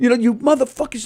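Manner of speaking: acted-out, raging, high, furious scream. Retelling an angry comic's outburst: imitating someone screaming. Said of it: "He's screaming at us out here".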